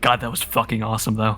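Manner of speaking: muttering in a character voice. In a role-playing game, a player voices Varry's reaction, muttering under her breath. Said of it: "just under her breath like".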